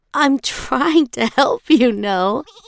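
lighthearted, teasing, playful, light and high. Pachma speaks to the wriggling animal she holds: playful. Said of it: "she said playfully".

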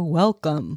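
put-on old computer-style voice. Recalling the old computer greeting: AOL welcome voice. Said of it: "remember when A O L used to go".

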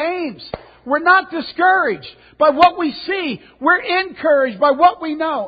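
roaring shout. Retelling coming inside and yelling at Ames: imitating own past yelling. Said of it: "I yell at Ames".

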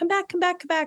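light, high, playful, easygoing lighthearted tone. Showing how one asks someone to come back, said lightheartedly. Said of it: "I say it in a really lighthearted way".

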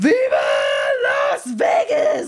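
booming, very deep lion-man cry. Retelling how a man celebrated, trying to sound like a lion man. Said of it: "trying to sound really like a lion man".

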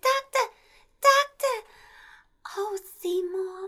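very high, all-breath, breathy bombshell voice. Describing the movie's Audrey, the speaker mimics how she talks: breathy Audrey voice. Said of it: "this very breathy, wannabe Marilyn voice".

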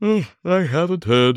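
said through a yawn. The man with the large chin answers a red-faced gentleman's question, yawning. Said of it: "yawning again".

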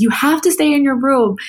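high-pitched yelling. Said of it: "my mom is yelling at my grandfather".

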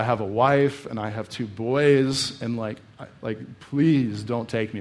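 mock, slow, pleading cry, boys drawn out. Telling how a man begged soldiers not to take him, retelling a man crying out. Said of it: "He cries out".

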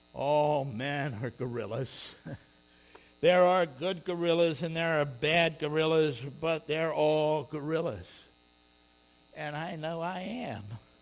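heavy-hearted, mournful, sorrowful tone. Quoting a man speaking at a prayer meeting, retelling in mournful voice. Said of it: "he said in a kind of a mournful voice".

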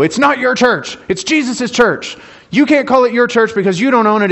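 bitter scolding. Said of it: "somebody has obviously done it to me in that exact tone".

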